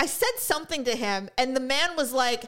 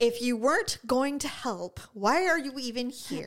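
ordinary talk

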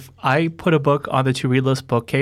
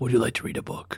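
distorted villain voice, quieter; 9 dB quieter than usual. Speaker jokes about announcing the next book choice in a Jigsaw voice. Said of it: "I should do the next choosing with a Jigsaw voice modifier".

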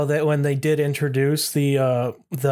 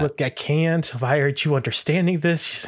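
ordinary talk

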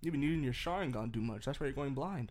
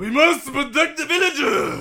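very high, very loud, shrill put-on Japanese accent; 12 semitones higher, 16 dB louder than usual. Playing a village leader who guarded the rock: put-on Japanese accent. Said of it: "it's a leader of the village".

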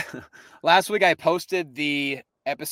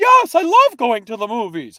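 very loud, sing-song, swooping put-on character voice; 9 semitones higher, 9 dB louder than usual. Offering to do an imitation of Robin, then speaking in the Robin voice. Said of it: "let me do the Robin voice".

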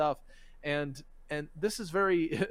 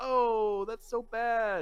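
very slow, high, drawn-out acted sarcasm; 6 semitones higher than usual. Quoting how people react to a threat, imitating a sarcastic reply. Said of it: "Sarcasm, of course".

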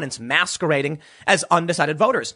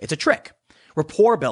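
usual speaking voice

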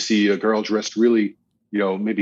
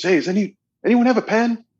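very high, shrill, notched-up raised call; 12 semitones higher than usual. Retelling a man asking a silent room for a pen again, imitating a louder call. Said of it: "brings it up a couple of more notches".

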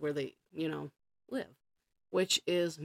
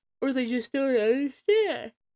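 talking through a very loud, high yawn; 9 semitones higher, 9 dB louder than usual. Speaker explaining parents and kids on social media, yawning while speaking. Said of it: "Sorry, I'm yawning".

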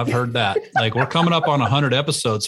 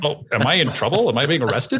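normal talking voice

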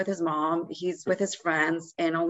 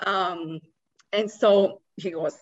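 ordinary talk, nothing marked

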